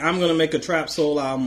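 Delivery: ordinary delivery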